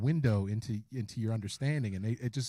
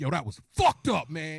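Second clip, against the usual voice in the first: pissed-off, angry, indignant venting outburst; 3 semitones higher than usual. Retelling a friend's reaction after watching a movie: imitating an angry friend. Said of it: "He was all pissed off".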